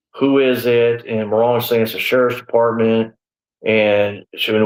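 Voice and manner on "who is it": ordinary delivery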